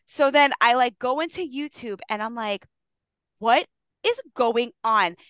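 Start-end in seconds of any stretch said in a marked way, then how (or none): 3.4-5.1 acted flustered, panicked, alarmed outburst. Retelling a camera failure before a live class: imitating own panic.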